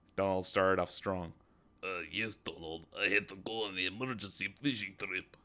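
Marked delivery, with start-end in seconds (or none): 1.8-5.2 clumsy, uncharming, put-on Russian accent. Reading a story aloud, a character playing Vladimir: uncharming Russian accent. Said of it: "Donald spoke in a Russian accent".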